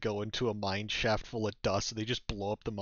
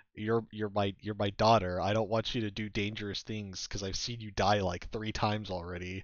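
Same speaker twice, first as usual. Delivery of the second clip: usual speaking voice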